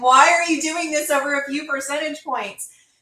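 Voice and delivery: play-acted, fed-up, exasperated yell, pitched high. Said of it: "I'm yelling at the T V".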